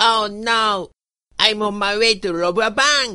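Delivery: very high, cartoonish character voice. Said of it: "ドリッピー単体のモノマネです".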